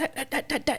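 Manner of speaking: put-on excited stutter on 'that'. Retelling what he said when excited, stuttering on 'that'. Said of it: "stutters and like fluency issues when we get really excited".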